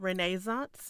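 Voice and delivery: arty way of speaking.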